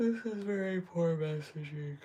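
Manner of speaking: talking through a yawn. Speaker going over an astrology chart online, yawning while speaking. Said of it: "I'm yawning".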